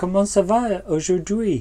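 fake American accent in French. Asked to do an American accent, speaking French in a fake American accent. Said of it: "C'est mon accent américain".

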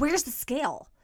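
annoyed, frustrated voice. Retelling her husband looking for her while packing for a trip, imitating annoyed husband. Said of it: "came to find me all annoyed and frustrated".

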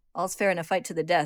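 ordinary delivery

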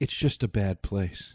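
low, completely deadpan delivery. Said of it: "And very deadpan".

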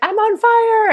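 very high hollering, yelling outburst. Retelling what a neighbor kept yelling downstairs: imitating a neighbor yelling. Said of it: "he kept yelling".

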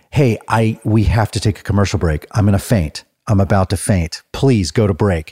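imitated whispering. Retelling whispering into a microphone to the producer: imitating own past whisper. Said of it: "I was whispering".

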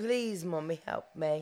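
put-on dog voice, British accent. Voicing a dog who begs Mommy: British accent voicing a dog. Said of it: "pretty British boy".

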